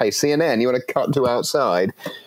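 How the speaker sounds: mock half-yell. Recounting watching the news coverage, retelling screaming at the TV. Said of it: "I was screaming at the television".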